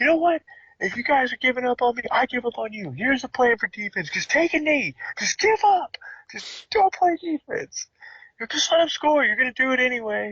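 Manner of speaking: put-on yelling. Retelling a coach scolding eight-year-old players, imitating a coach yelling. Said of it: "was yelling at him".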